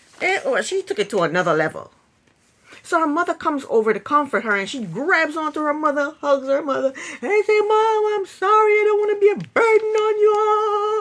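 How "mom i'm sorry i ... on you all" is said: mock very high, loud, drawn-out sobbing and bawling. Retelling an apology to a mother: imitating someone bawling. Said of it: "she's just bawling all out".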